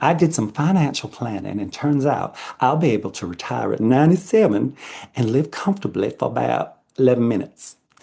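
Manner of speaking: put-on Southern US accent. A flight attendant shares a favorite joke line, in a Southern accent. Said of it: "I don't know why I did a Southern accent".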